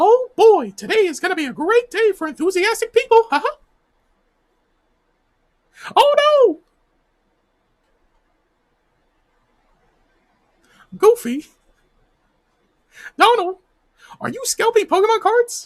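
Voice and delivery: very high, loud, squeaky voice. Speaker reads a text aloud in a Mickey Mouse voice. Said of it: "And Mickey Mouse voice".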